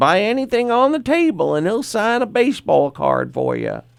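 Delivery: high, sing-song woman's voice. Retelling what a woman selling at a table said, imitating how she sounded. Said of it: "That's the way she sounded".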